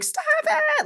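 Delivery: screaming in a very high shriek. Retelling shouting at dogs chasing a bunny rabbit: retelling a scream.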